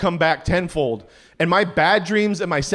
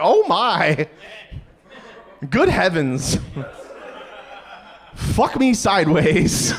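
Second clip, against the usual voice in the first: put-on slow voice of an elderly grandmother. Staring at snacks in a 7-eleven, the speaker reacts by imitating their grandma. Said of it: "started talking like my grandma".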